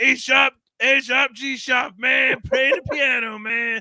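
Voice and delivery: loud, high, slow, drawn-out silly voice. Picturing a movie character playing piano, Max Rebo voice. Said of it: "It's that stupid voice".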